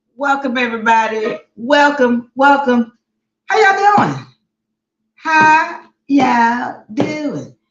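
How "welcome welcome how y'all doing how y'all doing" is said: put-on country southern accent, high and swooping. Host greets YouTube and TikTok viewers in a country southern accent. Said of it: "that's my country southern accent".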